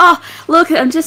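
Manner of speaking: high, feigned casual tone, innocent pretend nonchalance. Retelling how they edged close to Will; retelling a feigned casual tone. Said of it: "like I'm pretending to be casual".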